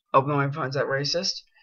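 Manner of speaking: plain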